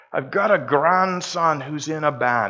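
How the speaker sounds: poor, put-on Scottish accent attempt. Quoting an older scottish gentleman, bad scottish accent. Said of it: "My Scottish accent is not good".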